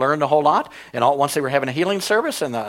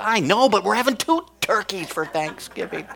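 put-on eager excitement, pitched-up gushing; 5 semitones higher than usual. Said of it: "You get all excited about this".

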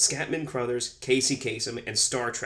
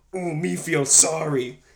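loud, high-pitched, drawn-out pitying tone; 5 semitones higher, 5 dB louder than usual. Retelling a movie scene, imitating Grimlock. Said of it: "make Grimlock go".

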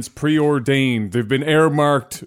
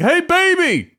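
put-on squeaky, very high baby hustler voice. Recalling a comedy skit about a baby selling on the corner: imitating Dave Chappelle skit. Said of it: "the Dave Chappelle skit where the baby's on the corner".

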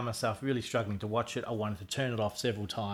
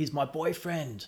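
acted-out shout; 5 semitones higher than usual. Recounting a film scene, quoting Beverly yelling to make them stop, retelling a yell. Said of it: "she yells out".

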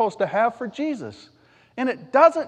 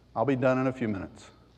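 soft, tongue-in-cheek, facetious solemn tone; 11 semitones lower, 7 dB quieter than usual. Mocking how people are told to act in church: facetious put-on tone. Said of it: "I'm being a little bit facetious".

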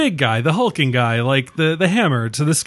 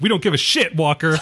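mocking, dismissive tone. Riffing on a party scene, imitating the partygoers dismissing Walker. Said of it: "And everyone's like".

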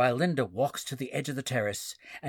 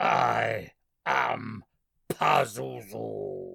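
guttural, rough, reverb-heavy demon snarl; 3 semitones lower than usual. Retelling a movie scene, the narrator voices the transformed kid: Pazuzu's guttural snarl. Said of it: "snarls in a guttural, reverb-heavy voice".

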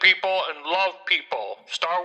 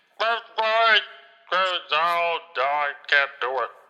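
unintelligible, garbled phone-like speech. Calling friends on the phone who can't understand him, hard-to-understand voice. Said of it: "Are you saying something?".

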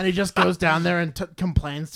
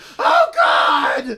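shrill, high, loud screaming cry; 9 semitones higher, 7 dB louder than usual. Acting out a man being eaten alive: imitating a man screaming. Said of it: "under his screams".

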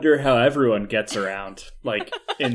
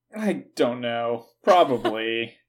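downcast, sorry-sounding, sad little voice. Asked whether he has ever been noogied, answering sadly. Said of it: "you said that so sadly".

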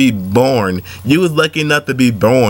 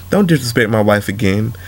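even-toned, composed, controlled calm voice; 3 semitones lower than usual. Showing a calm way to tell someone off: calm. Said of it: "this is a calm way you can say it like this".

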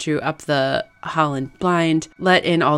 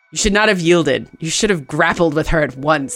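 plain reading voice

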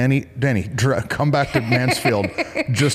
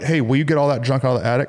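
ordinary talk

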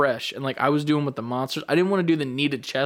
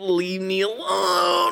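high, pitched-up anime character voice; 6 semitones higher than usual. Retelling own reply to someone making them redo a workout rep, anime voice. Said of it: "Anime voice".

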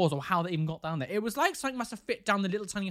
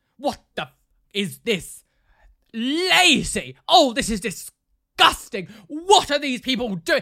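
loud, slow, lazy, drawn-out shouting rant; 4 semitones higher, 10 dB louder than usual. Retelling what was suddenly heard from the living room, imitating someone shouting. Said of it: "shouting in the living room".

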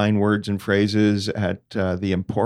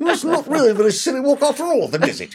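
tight-lipped comic voice, very high and swooping. Doing a John Cleese impression for the others: John Cleese impression. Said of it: "That does sound like him".

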